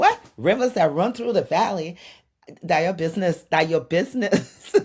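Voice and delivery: loud, high, mock, spoken through laughter. Speaker imagines friends' reply to their description of home, imitating friends laughing. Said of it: "probably laughing and saying".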